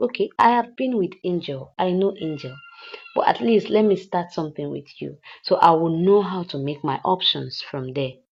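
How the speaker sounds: ordinary delivery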